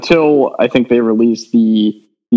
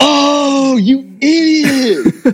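put-on screaming, higher. Retelling own reaction to a spoiler on a recording: imitating own past screaming. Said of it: "screaming into the mic".

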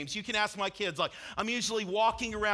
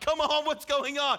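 high-pitched yelling; 5 semitones higher, 4 dB louder than usual. Retelling watching a losing game, retelling own yelling at tv. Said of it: "I'm yelling something different at the T V now".

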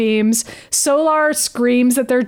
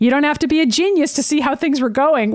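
usual speaking voice

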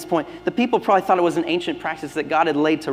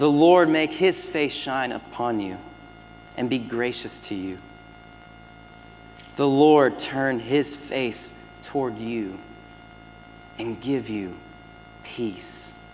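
slow, deliberate, measured delivery. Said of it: "I'm gonna read this slowly".

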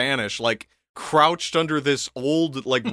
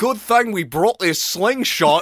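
put-on Australian accent, higher; 6 semitones higher, 3 dB louder than usual. Retelling what he said after shooting the crocodile, in an Australian accent. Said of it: "I'm giving him an Australian accent".

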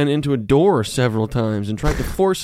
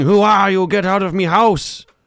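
mock woman's scream; 5 semitones higher, 4 dB louder than usual. Retelling a woman who caught the speaker leaving her room, retelling her scream. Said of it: "She was screaming".

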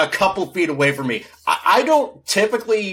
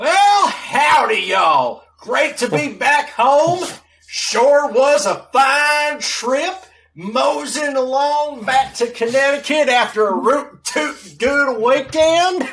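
over-the-top cowboy Texas drawl, pitched high; 8 semitones higher than usual. Greeted as the show goes around the horn, answer in a put-on texas accent. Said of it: "Are you going to keep this up for the entire show?".

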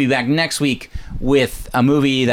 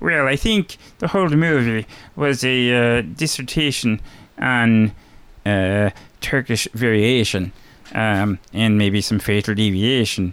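horrible put-on Swedish-sounding accent; 2 semitones lower than usual. Giving final thoughts on a movie, in a horrible Swedish-ish impression. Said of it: "that was my horrible kit impersonation, which was kind of Swedish in a way".

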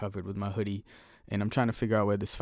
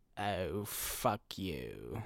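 condescending put-on British woman's accent, quieter; 9 dB quieter than usual. Imagining how rude talking cats would sound: Zazu voice. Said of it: "They'd have that type of accent".

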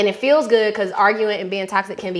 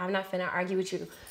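imitated very calm voice, much quieter; 2 semitones lower, 14 dB quieter than usual. Recalling a guy they used to date, the speaker imitates his calmest voice. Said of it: "in the calmest voice".

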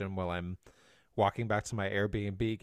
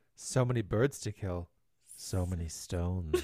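mock unhinged, psychotic-sounding voice; 3 semitones lower than usual. Imitating the other speaker's opening line to new friends, imitating a psychotic tone. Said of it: "you sounded psychotic when you said that".

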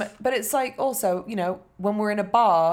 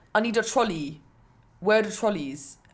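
put-on English rude-boy street accent. Retelling an English tourist asking the girl at the counter for a trolley: English rude boy accent. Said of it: "And that accent exists in America".

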